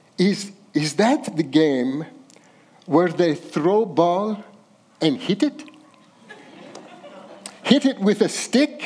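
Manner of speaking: bad amateur put-on Arabic accent. Retelling what Pops asked the speaker's dad: bad Arabic accent. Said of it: "forgive my bad Arabic accent here".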